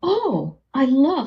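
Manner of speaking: very high, delighted, surprised gush. Showing how a phrase sounds with eyebrows up: higher-pitched surprised voice. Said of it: "My voice is higher pitched as opposed to the lower one".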